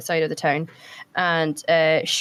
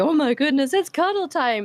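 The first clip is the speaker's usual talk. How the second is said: high, eager, excited puppy voice; 8 semitones higher than usual. Voicing a sled dog greeting someone who pets it: excited puppy voice. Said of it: "the excited puppy".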